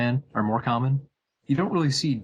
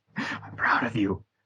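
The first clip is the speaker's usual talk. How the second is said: put-on muttering. Retelling a film scene in the car with Colossus, Deadpool muttering under his breath. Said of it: "congratulating under his breath".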